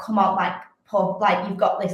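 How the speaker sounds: ordinary talk, nothing marked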